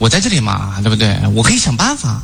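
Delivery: low, gentle, soothing and reassuring tone.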